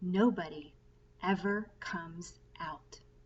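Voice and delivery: hushed, confiding, soft, slow stage whisper. Reading a story aloud, a grandfather tells a boy a secret: soft secret half-whisper. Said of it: "lowered his voice to a soft, secret whisper".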